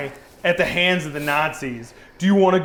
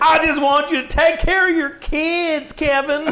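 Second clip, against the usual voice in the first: put-on very high voice with American South accent; 9 semitones higher than usual. Voicing a woman holding a baby in a made-up scene, southern accent. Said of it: "Because that was a southern accent".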